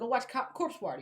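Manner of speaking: normal talking voice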